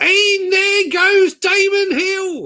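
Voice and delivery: very high, loud, slow belted calling. Showing what the voice of Formula One sounded like: poor Murray Walker impression. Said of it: "I will do a poor impression of him now".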